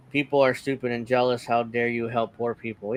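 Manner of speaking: ordinary delivery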